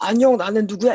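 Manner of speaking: deep, heavy character voice. Showing how the tiger role sounds: deep, heavy tiger voice. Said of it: "이런 식으로 이제 깊은, 깊고 중후한 목소리를".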